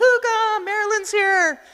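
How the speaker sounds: very high, calling-out yell. Retelling how a cousin at the door called to the grandmother: imitating someone yelling. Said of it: "he's yelling".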